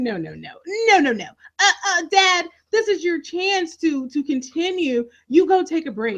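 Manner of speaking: mock insistent, protesting, pushing back hard. Retelling a daughter protesting her father's goodbye: imitating Olivia protesting. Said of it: "she's protesting".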